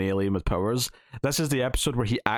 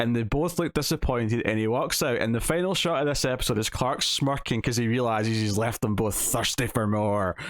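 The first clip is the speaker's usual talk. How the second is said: ordinary delivery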